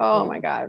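put-on sobbing, crying. Retelling breaking down crying on a mall bench: imitating own past sobbing. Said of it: "just sobbing".

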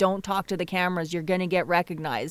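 plain

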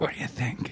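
asmr-style whisper into mic. Asking the co-host a question into the mic: ASMR-style whisper.

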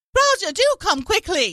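shrill, high, swooping put-on mid-Atlantic accent. Acting out a scared woman on a boat calling for Roger: mock mid-Atlantic accent. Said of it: "The mid-Atlantic accent or transatlantic".

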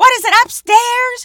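very loud, shrill, high-pitched yell. Retelling an older woman outside a building, imitating a woman yelling. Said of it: "She's yelling like to no one".

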